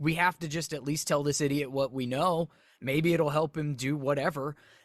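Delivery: ordinary delivery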